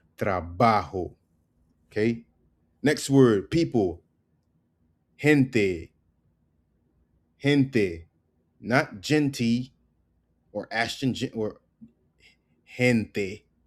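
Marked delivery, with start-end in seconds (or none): 0.2-1.2 stressed ba in trabajo, much lower pitch. Teaching spanish pronunciation, putting stress on ba in trabajo. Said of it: "Emphasis on the ba".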